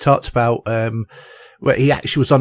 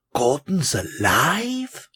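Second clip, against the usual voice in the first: acted puzzled, quizzical tone, swooping, lively and drawn out; 2 semitones higher, 6 dB quieter than usual. Imitating how an actor says his line, not in a big voice: imitating an actor's puzzled question. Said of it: "He actually goes".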